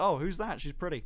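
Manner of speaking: usual speaking voice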